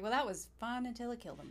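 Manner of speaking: ordinary talk, nothing marked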